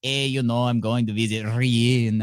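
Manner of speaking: slow put-on Mexican accent, Ryan stretched out. Imitating someone who says a name differently: put-on mexican accent. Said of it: "if you had a Mexican accent the whole time".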